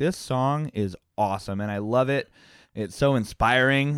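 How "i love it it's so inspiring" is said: normal talking voice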